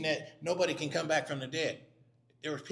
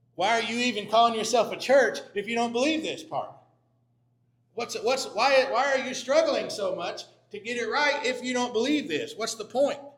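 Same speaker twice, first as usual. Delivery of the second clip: play-acted sarcastic tone, raised and pitched up; 7 semitones higher, 7 dB louder than usual. A speaker acts out what a writer said to a church; acting out sarcasm. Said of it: "He's being sarcastic with them".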